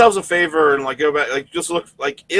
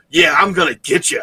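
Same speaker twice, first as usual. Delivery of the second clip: put-on little tough guy voice. Imitating how Sammy Guevara talked in an interview: Sammy Guevara tough guy voice. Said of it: "Sammy Guevara was using a tough guy voice".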